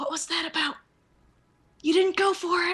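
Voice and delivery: whispering in a hush. Voicing a character who whispers to another character: whispering in character. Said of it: "Jed's gonna whisper to her".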